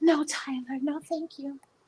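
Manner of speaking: tiny squeaky voice, very soft and very high. Retelling Janet's reply to Tyler about the wig, in Janet's little high squeaky voice. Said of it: "she got that little high squeaky voice".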